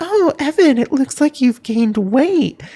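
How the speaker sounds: put-on sweet, cutesy, doll-like voice. Retelling what a friend's mom said about gaining weight: imitating a sweet cutesy doll-like voice. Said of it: "she sounds like this".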